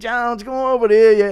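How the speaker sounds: loud, high calling out. Doing an impression a viewer asked for, Connor asking Jones to spot him: Conor McGregor impression. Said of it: "Impression of Connor asking Jones to spot him".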